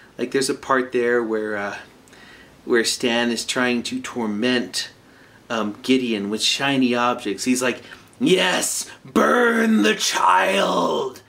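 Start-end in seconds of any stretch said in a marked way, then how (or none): 8.2-11.1 mock huge gleeful enthusiasm, very slow, swooping, drawn out. Retelling a cartoon scene of tormenting a child, imitating Stan with great enthusiasm. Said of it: "With such great enthusiasm".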